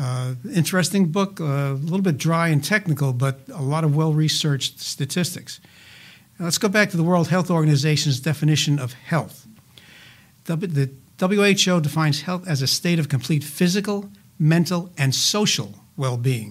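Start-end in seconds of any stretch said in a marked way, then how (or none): 15.0-16.5 "social" stressed, slow and drawn out. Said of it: "So, emphasis on social".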